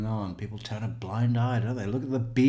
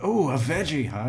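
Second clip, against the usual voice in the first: put-on, excited, keen, eager delight; 4 semitones higher than usual. Imitating someone reacting to a veggie dish: imitating Jim Lewis all excited. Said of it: "He's all excited".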